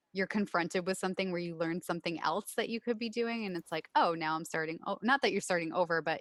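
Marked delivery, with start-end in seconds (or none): none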